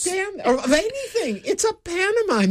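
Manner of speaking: high-pitched, outraged, disbelieving.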